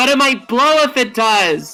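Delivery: panicked screaming and yelling. Voicing a professor screaming back at the boss: professor screaming back in panic. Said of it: "screaming at each other".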